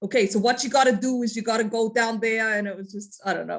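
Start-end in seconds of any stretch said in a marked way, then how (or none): 0.0-2.6 clumsy, terrible put-on Brooklyn accent. Retelling directions from an MTA worker, in a terrible Brooklyn accent. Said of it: "that's a terrible uh, accent".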